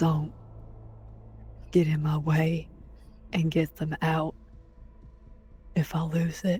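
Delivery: put-on voice, whispering under his breath. Voicing Omen warning Velasco before a fight: whispering under his breath. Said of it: "whisper under his breath to Velasco".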